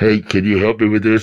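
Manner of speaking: low, disguised voice, sounding like a phone.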